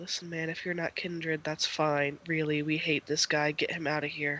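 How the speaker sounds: speaking low. Voicing a vault security guard addressing the group, with a lowered voice. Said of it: "one lowers his voice and he's like".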